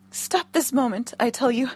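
ordinary delivery, nothing marked

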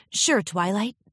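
ordinary delivery, nothing marked

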